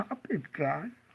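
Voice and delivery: high, hushed, giggling speech.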